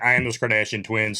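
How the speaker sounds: normal talking voice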